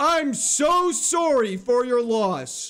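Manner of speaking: screamed delivery. Joking about being loud at a funeral, screaming the line. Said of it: "you're just screaming in their ear".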